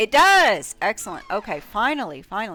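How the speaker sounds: loud, near-yell. Reacting as a key finally works: loud, sounding like yelling. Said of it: "Sorry if I sound like I'm yelling".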